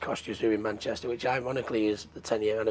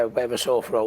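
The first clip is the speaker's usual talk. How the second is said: ordinary talk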